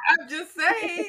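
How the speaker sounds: slow, mock snooty voice, laughing.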